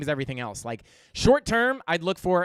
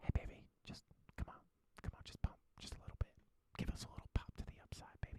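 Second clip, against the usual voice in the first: playful, joking fake whisper, barely voiced, very hushed. Answering a viewer's super chat, addressing the coin directly: pretend whispering. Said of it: "Whisper into Ada's ear".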